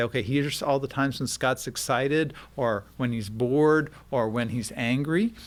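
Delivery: ordinary delivery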